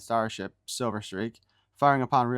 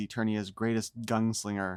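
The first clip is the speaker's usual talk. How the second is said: plain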